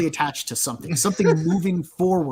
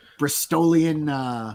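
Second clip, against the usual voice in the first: ordinary delivery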